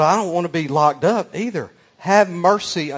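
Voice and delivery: put-on meek, little pleading voice. Storyteller acting out a woman's plea to a man, imitating a meek voice. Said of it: "in this little kind of meek voice".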